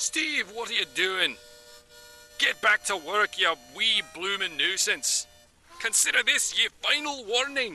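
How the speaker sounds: put-on Scottish accent. Showing off accents one by one, naming each first: Scottish accent.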